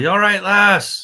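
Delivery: very high, loud yell. Checking on a woman who fell down into the water, yelling down a hole. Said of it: "Probably yell down in the hole".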